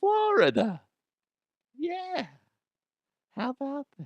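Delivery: creepy, unsettling voice, high and swooping. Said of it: "Why am I talking like this? It's pretty creepy".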